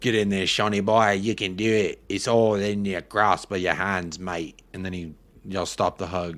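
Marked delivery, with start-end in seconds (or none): 0.0-4.6 bad, clumsy, put-on Australian accent. Imagining what a hugging coach would say: bad australian accent. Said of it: "shaking your head at the accent".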